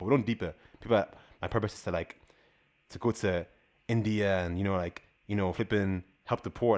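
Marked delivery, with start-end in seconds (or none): none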